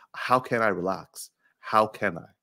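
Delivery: ordinary delivery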